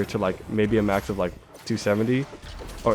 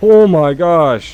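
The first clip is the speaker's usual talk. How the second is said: blurted yell, very loud and high; 7 semitones higher, 14 dB louder than usual. Reacting to too many mobs while playing, shouting into the mic. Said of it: "I'm shouting into the mic".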